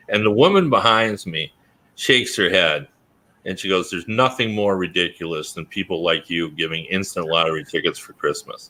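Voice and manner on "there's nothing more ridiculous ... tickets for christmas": ordinary talk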